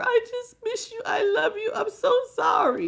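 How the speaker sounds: very high, slow, tearful weeping voice. Describing a card's person who'll come to you crying, imitating someone crying. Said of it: "gonna come to you crying you a river".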